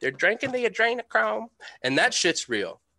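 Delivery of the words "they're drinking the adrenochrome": put-on Southern accent, higher pitch. Quoting people interviewed on tv, imitating a southern accent. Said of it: "I won't pretend to do the Southern accent. You do it much better than I do".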